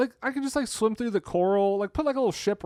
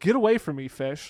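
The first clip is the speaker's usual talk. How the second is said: usual speaking voice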